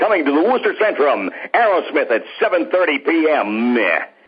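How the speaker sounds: goofy radio announcer. Describing announcers who filled the air with sound, doing a big dumb radio announcer voice. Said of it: "big, dumb radio announcers".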